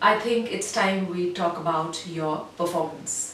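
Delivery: deep chest voice ending on a low note. Demonstrating how to end on a lower note, in a deep chest voice. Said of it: "in general speaking in a deep voice".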